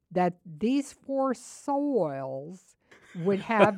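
very slow, stretched-out preacher voice drawing out "soils".

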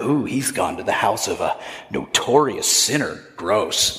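very low, sniffy, scornful, disdainful grumbling. Retelling what the displeased people grumbled, mock-disdainful grumbling. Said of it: "Can you just feel like the cringe dripping off of that?".

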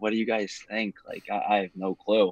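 whispered speech. Recalling an interview, asking the two guys on either side, retelling a whisper. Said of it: "I'm like whispering".

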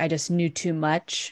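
plain

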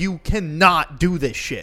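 very slow, deliberate rant, put-on yelling. Retelling a video of a man going off on people, imitating someone yelling. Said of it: "him just fucking yelling".

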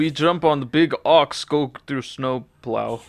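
put-on rural Russian accent. Riffing on what a hick Russian would sound like: hick Russian accent. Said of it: "What would be a hick Russian be like?".

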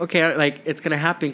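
ordinary talk, nothing marked

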